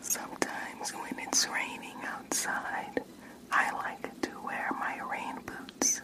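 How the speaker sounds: whispered, very hushed and unhurried. Whispering a short phrase into an ear for a hearing test: whispering. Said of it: "I'm gonna whisper a short phrase".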